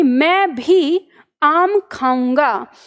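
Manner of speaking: "मैं भी" stressed and said slowly. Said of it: "म पे".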